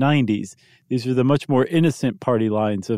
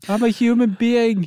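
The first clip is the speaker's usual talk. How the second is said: put-on loud scream, higher; 11 semitones higher than usual. Retelling what the range driver yells when hit: imitating someone screaming. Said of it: "screams at the top of their lungs".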